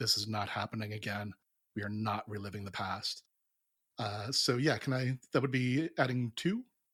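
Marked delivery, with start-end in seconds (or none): 0.0-3.2 repeated quiet mutter under the breath. Playing a character charging in against his instincts, muttering under breath. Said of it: "just muttering under his breath over and over".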